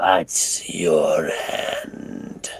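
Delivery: low, very slow rasping voice. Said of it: "You hear a rasping voice".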